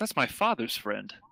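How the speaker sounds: a little disturbed. In a role-play, a lady answers a stranger who claims mutual friends, a little disturbed. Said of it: "she looks a little disturbed".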